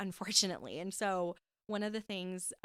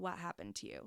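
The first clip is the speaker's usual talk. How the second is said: straight-faced, stone-cold, dead flat voice; 8 dB quieter than usual. Retelling her mom's reply in the argument: imitating mom's dead cold tone. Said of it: "straight face, dead cold".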